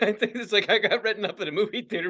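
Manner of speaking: laughing while talking. Reacting to a story about a movie theater job, laughing while talking. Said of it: "I can't stop laughing".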